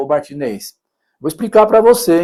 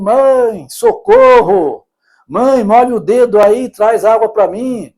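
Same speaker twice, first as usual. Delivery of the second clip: slow, stretched-out, mild calling cry; 4 semitones higher than usual. Acting out a son in hell calling to his mother: shouting for help.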